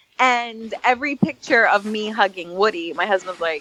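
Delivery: normal talking voice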